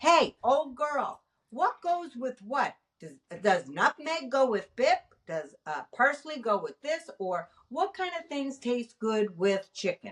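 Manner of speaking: plain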